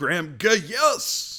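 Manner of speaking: very high-pitched broadcaster-style call. Pretending to be a broadcaster calling a made field goal: Marv Albert broadcaster call. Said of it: "if I was a broadcaster, every time he made a field goal, I'd go".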